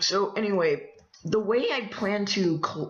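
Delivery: voice breaks, cracking mid-word on col-. Mid-explanation, the voice cracks. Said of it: "voice crack".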